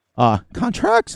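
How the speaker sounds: voice goes very high. Explaining a game mod when the voice jumps: voice goes really high. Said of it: "My voice just got really high there".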